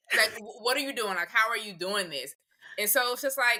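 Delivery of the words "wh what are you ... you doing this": ordinary talk, nothing marked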